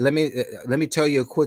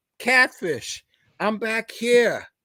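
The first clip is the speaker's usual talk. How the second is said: high, hollered yell stretched long; 8 semitones higher than usual. Retelling calling out from the back of the bus: retelling own scream. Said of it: "And so I scream out".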